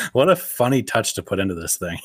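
normal talking voice

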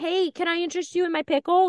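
play-acted very high, shrill street vendor holler. Retelling how pickles are offered at the Ren Fair: imitating someone yelling. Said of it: "yelling it kinda thing".

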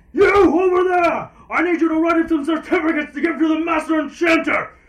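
very high, very loud, shrill yelling. Voicing a character in a shared story who calls out to someone, yelling. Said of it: "You hear him yell".

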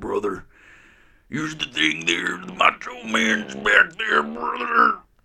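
very high, raspy rant, swooping wildly. Showing how easy the impersonation is, do a raspy Macho Man Randy Savage impersonation. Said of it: "make your voice a little raspy".

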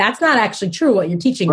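ordinary delivery

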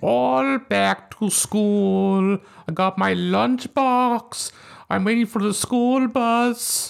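very slow character voice, every word stretched out. Talking about a movie scene with another speaker: Billy Madison impression. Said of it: "That's my Billy Madison im-, impression".

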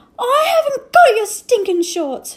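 very loud, very high-pitched, shrieking all-out scream. [name], pinned under Adil during a fight, screamed. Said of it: "screamed [name]".

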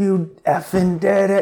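put-on yelling. Retelling his sponsor in the front row after the dance, imitating him yelling. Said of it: "he's yelling".

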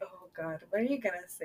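speaking while laughing through the words. Waiting to hear someone's first impression of you, laughing. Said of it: "I'm laughing because I'm like".

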